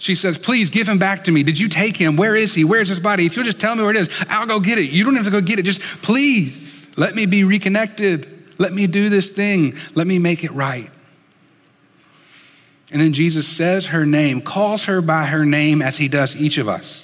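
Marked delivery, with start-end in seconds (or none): 0.4-10.9 mock pleading, high and desperate, with everything. Retelling her plea to a stranger outside the tomb: imitating a desperate plea. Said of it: "just this desperate plea".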